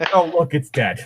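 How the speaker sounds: snide, sarcastic, mocking teasing tone. Acting out a sarcastic character teasing a teammate who misses: acting out sarcastic teasing. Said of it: "sarcastic remark".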